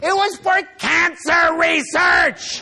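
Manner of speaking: very loud, very high, very slow angry rant. Recounting an argument about opposing cancer research money, retelling an angry outburst. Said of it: "So I got so angry".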